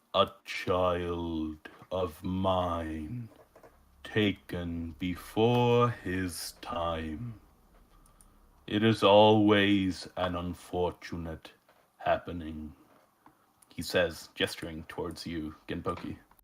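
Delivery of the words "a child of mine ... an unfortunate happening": heavy, echoing, very slow voice, mine drawn out. Game master voicing a skull figure addressing a player character: heavy echoing voice. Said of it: "a heavy voice echoes from beyond the skull".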